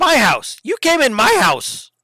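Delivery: clipped goblin-like voice. Game master voices a halfling speaking to a player, clipped, goblin-like voice. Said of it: "he's talking very clipped, almost talking like a goblin".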